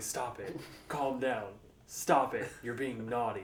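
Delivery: put-on whisper. Retelling a scene where a mall santa holds a squirming girl: imitating someone whispering.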